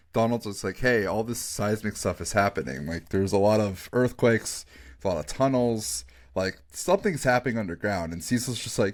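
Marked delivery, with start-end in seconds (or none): none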